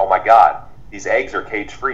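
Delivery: ordinary talk, nothing marked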